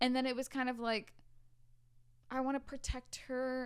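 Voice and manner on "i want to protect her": mock condescending, patronizing talking-down tone. Recalling how people treated her, imitating their condescending tone. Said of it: "in like a condescending tone".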